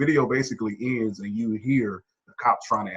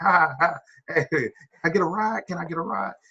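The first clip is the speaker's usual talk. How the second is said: put-on high, giggly, childlike laughing while speaking; 7 semitones higher than usual. Retelling how a man asked a person in a car for a ride: imitating childlike laughter. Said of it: "He's laughing like a child".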